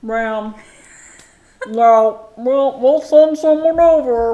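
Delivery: loud, slow, mock talking through a full mouth. Describing a film scene, imitating the Home Alone cop with mouth full. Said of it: "he's like got his mouth full of a donut".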